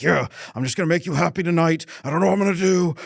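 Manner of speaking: words pushed through a clenched jaw. Retelling how a stressed man answers his wife's hug: imitating someone talking through gritted teeth. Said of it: "grinding his teeth and he's just like".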